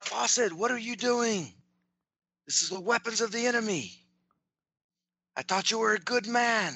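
calling out loudly across distance, pitched high. In a game scene, a player's character calls out to Fawcett: calling out. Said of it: "I'll call out to Fawcett".

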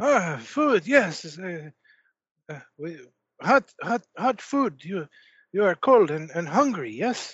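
put-on thick strange French accent. Voicing a french peasant greeting the players: thick strange french accent. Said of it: "such a thick, strange accent".

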